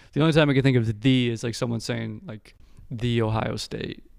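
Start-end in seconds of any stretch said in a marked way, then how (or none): 2.9-4.0 grand, self-important, pompous announcement tone. Imitating people who say "the" to sound important: mock prestigious tone. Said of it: "They try to be all prestigious".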